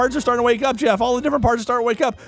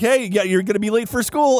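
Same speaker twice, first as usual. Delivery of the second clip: ordinary talk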